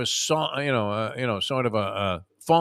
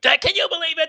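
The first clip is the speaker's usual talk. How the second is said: mock screaming, higher and louder; 5 dB louder than usual. Imitating a friend watching a game on tv: imitating someone screaming at tv. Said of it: "screaming at the television set".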